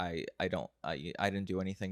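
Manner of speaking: ordinary delivery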